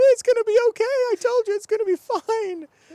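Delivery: exploding cheer, very loud, high and excited. Retelling how everybody reacted, imitating an excited outburst. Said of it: "everybody explodes".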